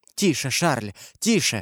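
ordinary delivery

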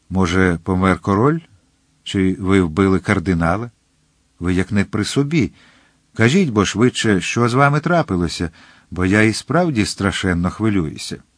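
ordinary delivery

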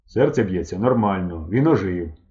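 ordinary delivery, nothing marked

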